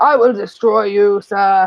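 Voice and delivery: slow, dramatic video game announcer voice. Explaining how a man expresses anger, the speaker quotes him, video game announcer voice. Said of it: "he speaks like like a video game announcer".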